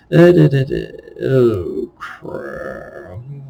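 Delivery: mumbling, then sheepish, polite tone.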